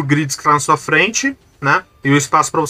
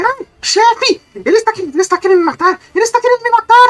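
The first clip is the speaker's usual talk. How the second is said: goblin voice screaming, much higher; 3 dB louder than usual. Voicing a goblin crying out to his boss: screaming goblin voice. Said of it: "ele dá um grito".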